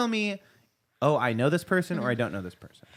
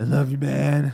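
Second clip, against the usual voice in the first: put-on loud, sloshed, boozy drunken voice; 5 dB louder than usual. Doing an impression of a drunk friend for the others: imitating drunk John. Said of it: "Here's my drunk John".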